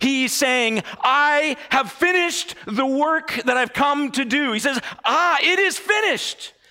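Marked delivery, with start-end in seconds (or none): 5.0-6.5 mock exultant, triumphant cry, loud and high. Acting out what he says, acting a loud triumphant cry. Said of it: "It's a triumphant cry".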